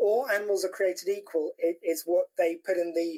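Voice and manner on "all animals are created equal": usual speaking voice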